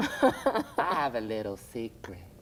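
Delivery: Southern Georgia accent, swallowed L in "little". Speaker demonstrates how swallowed L's sound, in a Georgia accent. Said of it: "that's more from like like like Georgia".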